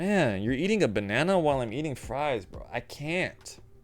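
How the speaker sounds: mock repulsed, grossed-out, disgusted griping. Quoting your uncle reacting to someone eating while he dips his fries, imitating Uncle Bob's disgusted voice. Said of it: "says in a disgusted voice".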